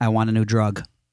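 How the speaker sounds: ordinary talk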